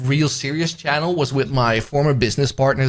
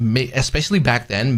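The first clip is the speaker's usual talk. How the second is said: ordinary talk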